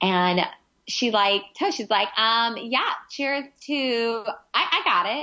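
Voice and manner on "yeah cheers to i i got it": slow, faltering, fumbling delivery. Retelling a toast from the show: imitating Hannah Ann's toast. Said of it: "that's how she said it".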